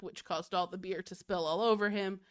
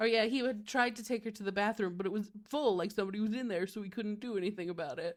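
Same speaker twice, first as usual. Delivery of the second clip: casual, lightly done dude bro voice. Recapping a flashback where Ned explains what happened, in a slight dude bro Ned voice. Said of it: "I'm using my slight dude bro voice".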